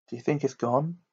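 hushed, fearful stage half-whisper. A boy waiting in fear beside a friend asks, half-whispering. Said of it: "Harry whispered".

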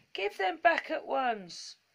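crying out indignantly. The toys demand that a goblin give the things back, indignant cry. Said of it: "cried the toys indignantly".

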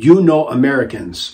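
put-on clumsy, halting broken English with a thin accent. Speaker retells what the leader said while grabbing the Bible, imitating broken English. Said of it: "he said in broken English".

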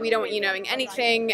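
normal talking voice

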